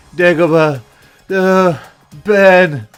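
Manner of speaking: dazed, high groggy voice. Quoting Luke coming out of a coma: dazed Luke voice. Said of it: "in the voice of Luke when he's coming out of his sort of coma type thing".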